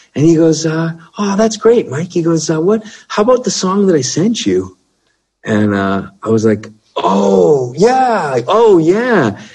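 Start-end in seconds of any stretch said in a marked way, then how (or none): 0.6-2.1 imitated soft sweetness, much higher pitch, faster. Retelling a phone call, the speaker imitates the other man as a soft, sweet guy. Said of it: "this soft, sweet guy".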